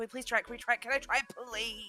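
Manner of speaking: put-on nagging, begging child voice. Retelling how a kid begged to try a new game: imitating Zach begging. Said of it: "Zach was driving me nuts about it, going".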